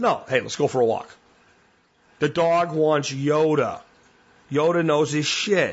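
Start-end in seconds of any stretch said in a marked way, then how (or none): 0.3-1.1 firm, assertive, no-nonsense plain voice. Showing how to call a dog for a walk, firm assertive tone. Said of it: "That dog needs you to be assertive".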